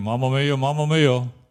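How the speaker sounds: screaming out loudly. Retelling a young soldier's cries in a minefield: imitating someone screaming. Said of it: "And he was screaming".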